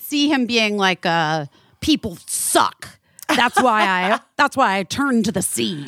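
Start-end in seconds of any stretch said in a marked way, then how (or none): 1.8-5.8 put-on pirate talk in cartoon style. Imitating a naturalist who doesn't like people: cartoon pirate voice. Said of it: "a cartoon pirate".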